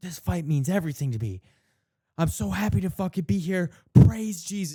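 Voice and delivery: heartfelt, emotion-laden voice, high and loud. Imitating a fight translator who adds emotion: emotional delivery. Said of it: "He adds, like, the emotion into it".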